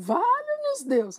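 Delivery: shrill, high, very loud, booming bellow. Narrator voicing the mother after hearing the room is haunted, bellowing. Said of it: "a mãe berrou".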